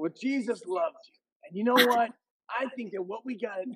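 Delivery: very high-pitched preacher voice. Doing an impression of his pastor father preaching: imitating his pastor dad preaching. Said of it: "best impression of their dad preaching".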